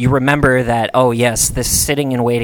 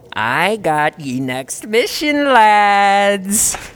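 very slow, smug goblin drawl, high-pitched; 8 semitones higher than usual. Voicing a smug goblin who offers the players a mission: smug goblin voice. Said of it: "This smug dickhead comes walking up and he says".

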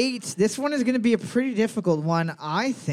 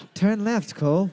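mock navigation-system voice; 2 semitones lower than usual. Retelling what the car GPS said: Jude Law voice. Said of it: "you changed the G P S in my car to be Jude Law's voice".

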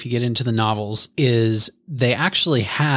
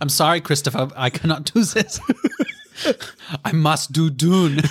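heavily laid-on fake German accent, pitched up; 5 semitones higher than usual. Showing how it would go, apologizing to Christopher, fake German accent. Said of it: "You do a killer German too".

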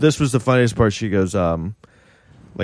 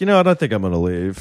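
ordinary talk

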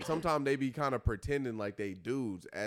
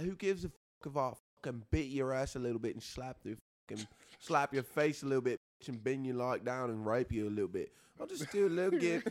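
provocative, boastful tough-guy voice, spicy and bragging; 3 semitones higher than usual. Imitating a voice memo of Andrew Tate talking spicy. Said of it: "I can't really talk like him".

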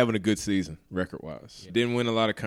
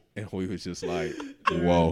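usual speaking voice

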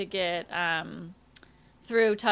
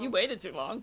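ordinary talk

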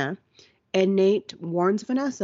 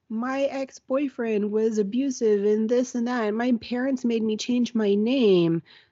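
put-on fake crying, mock sobbing; 4 semitones higher than usual. Retelling Dan's scene, the speaker acts out a woman's sob story, imitating fake crying. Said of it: "she's crying she's fake crying".

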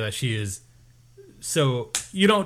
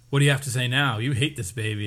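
ordinary talk

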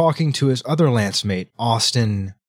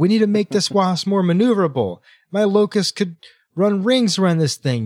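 play-acted, pitched-up, raised yelling; 9 semitones higher than usual. Retelling a story, the speaker acts out someone yelling at a tech: retelling someone yelling. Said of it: "she's like yelling at the tech".

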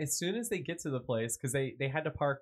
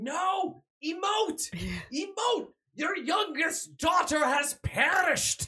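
put-on very high, drawn-out scream with slight Irish accent; 6 dB louder than usual. Retelling a film director yelling from behind the camera; slight irish accent. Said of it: "You went a little bit Irish there".

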